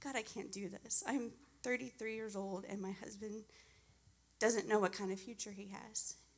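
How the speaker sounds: ordinary talk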